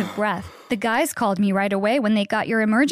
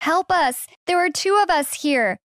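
high, loud calling yell; 7 semitones higher than usual. Reading a story where characters, trapped, call to rescuers: yelling for help. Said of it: "I yelled".

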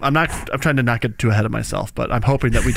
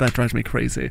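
normal talking voice

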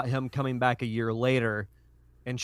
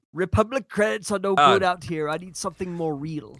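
high, strained, half-committed character voice; 6 semitones higher than usual. Showing character voices that hurt to do, half-done strained impression. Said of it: "That's why I only do half an impression".

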